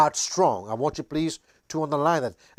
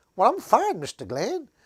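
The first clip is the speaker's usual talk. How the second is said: small, high pretend ant voice; 7 semitones higher than usual. Retelling talking to ants as a boy, answering as the ant: pretend ant voice. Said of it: "I would pretend like the ant is talking back to me".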